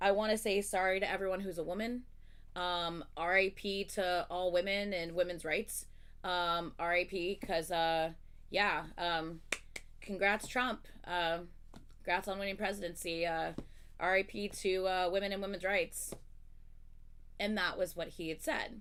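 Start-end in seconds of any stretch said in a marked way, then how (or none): none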